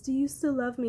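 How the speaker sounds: small, high, sugary, coaxing little voice. Retelling a woman asking him if he still loves her, in a mock sweet little voice. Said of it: "she's trying to be in this, like, sweet little voice".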